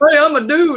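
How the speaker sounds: poor attempt at a man voice. Showing the go-to impression used for every guy: put-on dude voice. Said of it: "that's my dude voice".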